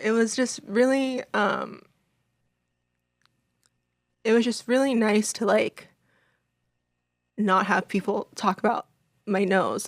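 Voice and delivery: tearful, choked-up voice, near crying. Talking about reading comments on a post-surgery photo, tearful, near crying. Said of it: "I'm gonna cry again".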